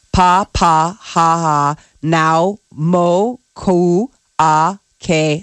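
words broken up syllable by syllable. Sounding out a long name after being told to break it into pieces, broken into syllables. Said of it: "You got to break it down into like five pieces".

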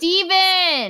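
very loud, high-pitched full-volume yell. Calling someone from another room: yelling a name. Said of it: "I'm gonna have to yell".

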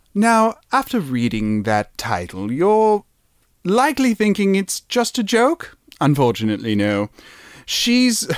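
put-on English accent, attempted. Reading aloud after a title, in an attempted English accent. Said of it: "Should I try my English accent?".

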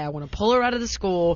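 plain

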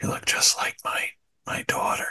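unsettling, breath-heavy, hushed lean-in whisper. Retelling Joe Biden leaning over a girl at a school: creepy whisper imitating Joe Biden. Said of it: "creepy whisper".

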